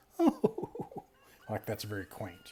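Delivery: giggling and laughing while talking. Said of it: "he kind of giggles, like, he laughs".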